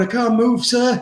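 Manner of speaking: slow, drawn-out, overdone robot voice. Retelling how he faked being unable to move in class: robot voice. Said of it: "you took it too far with that robot voice".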